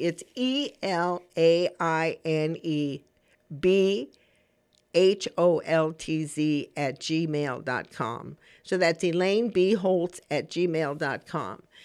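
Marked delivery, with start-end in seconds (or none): 0.0-8.4 each letter spelled out very slowly, one by one. A host spells out her new email address for listeners: very slowly. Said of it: "I'm going to say it very slowly".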